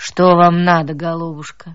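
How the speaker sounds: bored, uninterested low bass voice, level and loud. A narrator reads a lady asking a visitor what she wants, indifferent low bass. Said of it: "спросила она равнодушным низким басом".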